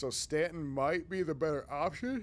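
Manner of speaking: words stretched through yawn. Discussing which game servers to pick after a busy work day: yawning. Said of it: "Sorry, I'm yawning".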